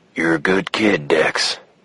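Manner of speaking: low, feather-soft ghostly whisper. Reading a novel scene where Harry speaks to Dex from behind, in a feather-hard ghost whisper. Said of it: "whispered Harry from behind in his feather-hard ghost voice".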